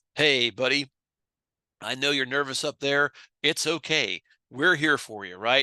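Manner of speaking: calm, steady, soothing, reassuring delivery. Speaker demonstrates how to talk to a nervous kid at the plate: calm tone. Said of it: "You have to model calm".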